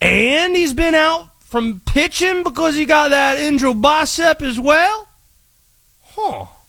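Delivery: put-on Cajun accent. Character giving a baseball hot take on the way out, Conspiracy Josh Cajun accent. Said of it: "This is Cajun, right?".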